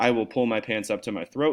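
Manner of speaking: ordinary talk, nothing marked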